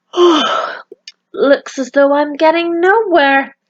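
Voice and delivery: yawning words. Reading a character's line from a story, yawning. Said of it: "yawned Milo".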